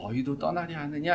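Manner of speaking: soft, drained, forlorn, lonely voice. Imagining the question spoken today, imitating a weak, lonely voice. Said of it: "힘 빠진 목소리로 약간 아, 쓸쓸한 목소리로".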